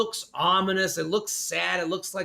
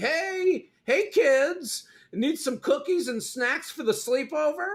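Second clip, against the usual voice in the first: put-on very high-pitched elderly man voice; 9 semitones higher than usual. Teasing Chris about looking old on the show; imitating Chris as an old man. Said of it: "you're starting to look old on the show".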